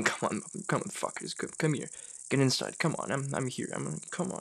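mock muttering under breath. Describing a man crouched waiting by a door, quoting him muttering under his breath. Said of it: "you hear him under his breath saying".

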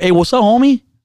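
mock dismissive, disrespectful tone. Retelling how a guy greeted the speaker, mimicking a disrespectful tone. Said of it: "in a very disrespectful tone".

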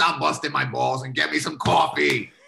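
rough, creaky, raspy heavy-smoker voice. Retelling his dad asking for coffee at Denny's, imitating a heavy smoker's voice. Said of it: "sounds like he eats like Marlboro cigarettes".

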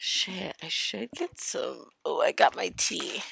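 hoarse, rough, raspy, creaky voice. Host talking to listeners about a weekend away, in a raspy voice. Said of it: "always with the raspy voice".

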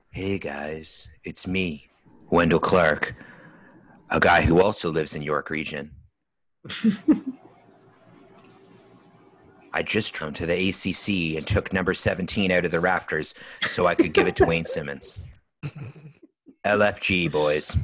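soft, put-on asmr-style whisper. Performing an imagined scene while others close their eyes: ASMR-style voice. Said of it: "I'm gonna do it like A S M R style".

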